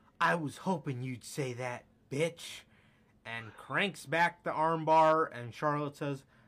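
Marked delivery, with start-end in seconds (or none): 0.2-2.6 mock awkward, cringey, try-hard tone. Retelling a wrestling match, quoting the winner's line: imitating Ronda's cringy delivery. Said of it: "in the cringiest fashion of all time".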